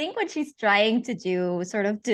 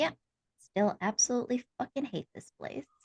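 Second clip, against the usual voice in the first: soft, muttered whisper to herself; 2 semitones higher, 7 dB quieter than usual. Voicing a character who whispers to herself before crossing the street: whispering to herself. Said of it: "whispers to herself".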